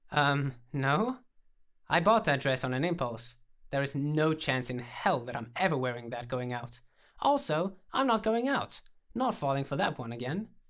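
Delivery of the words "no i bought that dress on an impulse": ordinary delivery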